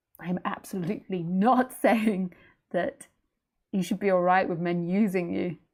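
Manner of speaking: loud, speaking straight through laughter. Answering a question that was just read out, laughing while talking. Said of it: "I'm sorry, I'm laughing".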